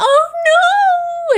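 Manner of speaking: very high, shrill, loud wail. Retelling a livestream moment where someone gets bad news: imitating someone wailing.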